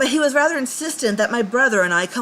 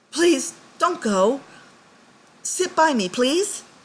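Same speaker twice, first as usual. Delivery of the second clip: very gentle, raised, higher voice; 4 semitones higher than usual. He calls after the narrator, who is walking away, louder but still gentle. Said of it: "in a louder, but a still very gentle voice".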